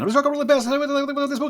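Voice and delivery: put-on rapid-fire announcer voice. Mocking hyped book reviews: Micro Machines guy voice. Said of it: "sounding like the Micro Machines guy".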